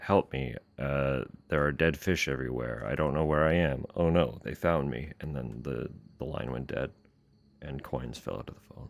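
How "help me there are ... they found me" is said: normal talking voice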